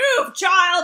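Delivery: irritated, agitated yell at full volume, high. Reminding someone how they yelled at a girl on their driveway, imitating an agitated yell. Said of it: "It was like so agitated".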